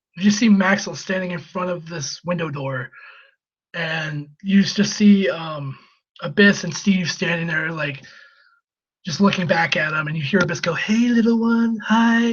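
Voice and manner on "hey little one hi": eerie, unsettling, slow and high-pitched. Retelling a wrestler's line to a child: imitating a creepy greeting. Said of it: "like, all creepy and shit".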